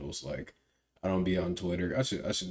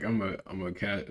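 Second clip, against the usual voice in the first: usual speaking voice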